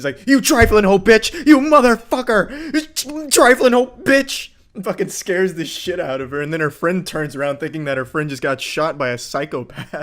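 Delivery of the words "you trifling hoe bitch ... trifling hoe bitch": super aggressive screaming, shrill, very high, very loud. Retelling a clip where someone yells at a girl: imitating Nerdballer's aggressive yelling. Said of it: "really made it, like, super aggressive".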